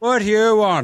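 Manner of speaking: very high, shrill, surly put-on Irish accent. Retelling a visit to a New York bar, imitating a surly Irish bartender. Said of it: "They're just doing the Irish accent thing".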